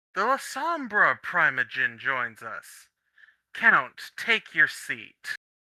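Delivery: loud, slow, drawn-out shout. Voicing a character standing on the bar who announces an arrival: shouting out. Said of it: "shouts out".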